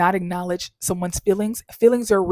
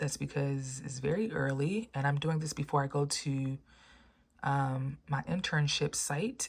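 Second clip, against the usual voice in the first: deep, very quiet, hushed morning voice; 5 semitones lower, 15 dB quieter than usual. Vlogging very early before going to an internship site, in a deep early-morning voice. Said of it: "Sorry my voice is deep".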